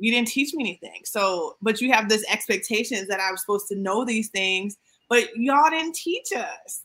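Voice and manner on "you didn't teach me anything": ordinary delivery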